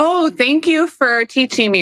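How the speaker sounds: mock sarcastic tone. A speaker retells replying to a man explaining sports to them: mock sarcastic thanks. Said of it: "just sarcastically being like".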